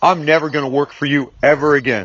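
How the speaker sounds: ordinary talk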